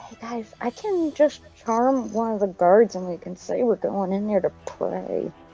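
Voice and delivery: whispering. Whispering to the group a plan to charm a guard: whispering to the group. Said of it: "I'm gonna whisper to the group".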